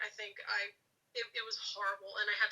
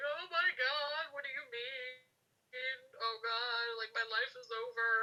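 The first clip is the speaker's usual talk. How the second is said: tearful crying outburst, sobbing through words; 3 semitones higher than usual. Retelling hearing a diagnosis, sitting up: imitating own past crying. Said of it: "I sit up and I'm crying".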